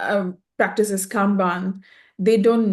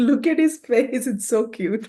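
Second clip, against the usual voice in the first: talking between bursts of laughter, laughing through the words; 3 semitones higher than usual. Reacting to the special guest's face, laughing while talking. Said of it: "I can't s-, stop laughing".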